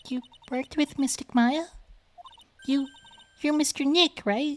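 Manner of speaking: very high-pitched, strained voice pushed to its top. Voicing a character who questions Phoenix Wright, as high-pitched as possible. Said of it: "I'm gonna go get as high pitched as I possibly can here".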